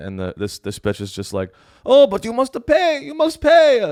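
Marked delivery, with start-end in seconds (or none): 1.8-3.9 bad put-on Italian accent, very high-pitched. Acting out a reply to the president of Greece, who can't pay, in a bad accent that sounds Italian. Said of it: "That's Italian".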